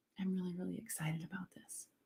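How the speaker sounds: very quiet, level, flat, quick, barely there. Explaining volume, the speaker demonstrates the line as a quiet volume demonstration. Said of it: "See the volume".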